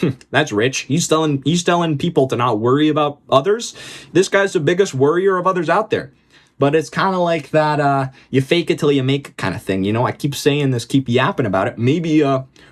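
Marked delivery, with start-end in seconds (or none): none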